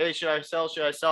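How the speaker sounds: normal talking voice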